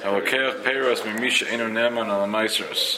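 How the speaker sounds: ordinary talk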